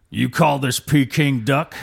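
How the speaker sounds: put-on Chinese cowboy accent. Challenged to do a full Hollywood Chinese cowboy, the performer goes for it, Chinese cowboy accent. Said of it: "Give us your best Chinese cowboy".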